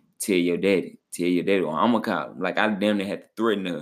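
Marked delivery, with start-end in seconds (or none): none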